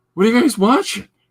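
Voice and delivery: very high, cracking, voice-breaking adolescent voice. Retelling how a teenage boy asked the family what they were watching; voice-breaking teenager. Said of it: "In that voice breaking teenager".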